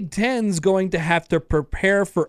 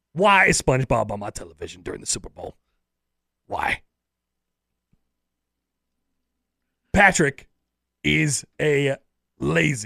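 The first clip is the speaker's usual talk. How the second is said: put-on sports pundit rant voice, lower pitch; 4 semitones lower than usual. Doing a take on SpongeBob at the Super Bowl: Stephen A. Smith impression. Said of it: "If I was Stephen A. Smith doing a take".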